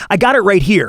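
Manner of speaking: acted sarcastic brush-off. Telling how a man on the phone blew him off, the speaker imitates Mister Smith's sarcasm. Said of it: "like sarcastically".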